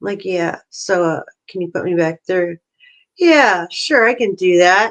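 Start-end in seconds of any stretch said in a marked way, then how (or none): 3.2-4.9 put-on smart-aleck tone, slower. Retelling a call where he asked to be put back through, imitating a smart-ass voice. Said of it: "kind of like that smart ass voice".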